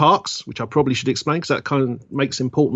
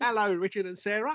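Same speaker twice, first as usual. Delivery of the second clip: high, deliberate put-on English accent; 8 semitones higher, 11 dB quieter than usual.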